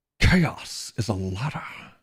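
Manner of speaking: hushed, breathy, classic film-star leading-man voice. Quoting a famous line while discussing the show, in a Sean Connery-like voice. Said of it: "I sound more like Sean Connery when I say it that way".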